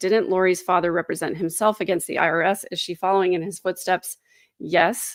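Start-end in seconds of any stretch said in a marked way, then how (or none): none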